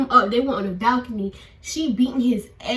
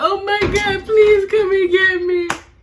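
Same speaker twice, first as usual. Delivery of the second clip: put-on tearful sobbing, high, loud bawling, pleading; 8 semitones higher, 6 dB louder than usual. Recounting calling someone from bed about going to jail, acting out own plea. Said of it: "I'm on the bed like".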